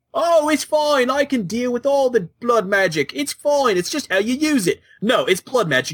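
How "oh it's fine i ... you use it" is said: high-pitched mock Welsh accent. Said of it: "Your Welsh accent is horrible".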